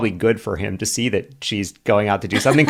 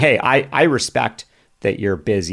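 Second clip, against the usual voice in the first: normal talking voice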